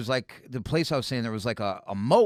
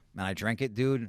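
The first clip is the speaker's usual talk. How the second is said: ordinary delivery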